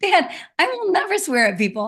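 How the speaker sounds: indignant, protesting tone, pitched high.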